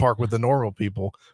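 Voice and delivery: ordinary talk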